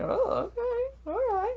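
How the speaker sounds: mock whiny, reluctant voice, high and soft sigh.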